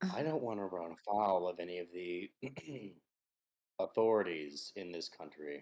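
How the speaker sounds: voice brought down, confidential. A character checks around before replying, in a lowered voice. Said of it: "and he lowers his voice".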